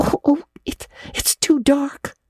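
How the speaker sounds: very slow, high, stretched-out outcry. Reading a novel, a character asked to run an errand answers, crying out. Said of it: "cried Anne".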